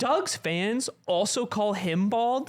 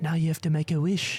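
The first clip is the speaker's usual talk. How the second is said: put-on whisper, lower pitch; 5 semitones lower than usual. Retelling what Josh whispered during a movie: imitating Josh's whisper. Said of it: "leans over and whispers into my ear".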